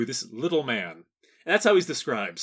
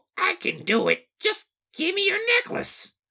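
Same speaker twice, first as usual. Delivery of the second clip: very high, squeaky, little voice. Redoing a little man's line after being told to improve it, in Toad voice. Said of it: "I think it's my Toad voice".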